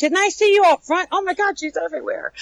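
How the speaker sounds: high-pitched, startled squeal. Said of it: "they're like".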